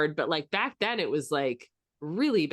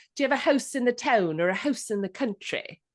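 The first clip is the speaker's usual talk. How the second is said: prim, very proper, high, clipped upper-class lady voice; 5 semitones higher than usual. Quoting a very proper woman heard on a bus: imitating a very proper, clipped woman. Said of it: "this very proper woman".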